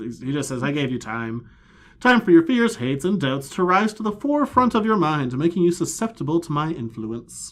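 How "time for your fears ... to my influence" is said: high, pitched-up character voice. Reading a comic character's line aloud: higher-pitched Arceus voice. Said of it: "You went higher on that one".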